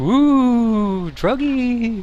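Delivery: goofy, very high, squeaky little voice. Explaining a game quest where you ham it up talking to the dude, silly little voice. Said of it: "You put on this silly little voice".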